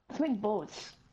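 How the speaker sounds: really strong, noticeable Canadian accent. Playing a video game with a friend, sounding Canadian. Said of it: "I sounded really Canadian when I said that".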